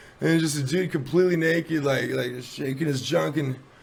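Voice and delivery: ordinary talk, nothing marked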